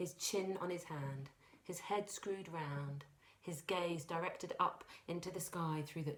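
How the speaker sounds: plain reading voice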